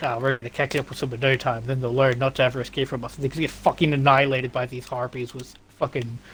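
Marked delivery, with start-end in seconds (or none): none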